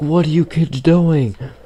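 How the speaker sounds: acted, high, shrill screaming schoolteacher voice. Retelling a teacher screaming at kids: imitating a teacher screaming. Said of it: "the teacher starts, like, screaming".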